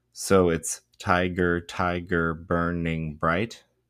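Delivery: "ti" in "tiger" stressed, hit hard and slow. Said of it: "a trochee begins with the stress and then the unstressed".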